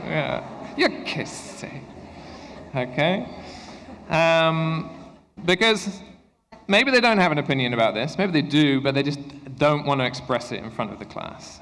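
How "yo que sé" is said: put-on whispered, breathy, disdainful, can't-be-bothered teen voice. Showing how teenagers answer in front of the class, imitating a disdainful teen. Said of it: "what's the intonation of it?".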